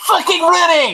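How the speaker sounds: very high, loud, muffled gnome voice. In a spell-casting game scene, voicing a gnome from below in a muffled gnomish voice. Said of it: "muffled gnomish voice from below that just says".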